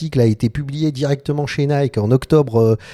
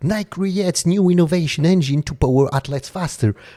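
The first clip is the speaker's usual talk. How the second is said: attempted English accent; 3 semitones higher than usual. French host reading a Nike headline aloud, put-on English accent. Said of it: "J'essaye de te le faire avec l'accent".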